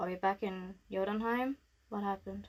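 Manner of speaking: very monotone, dead-flat voice with no pitch movement. Playing Riel looking around, in a very monotone Riel voice. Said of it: "in a very monotone voice".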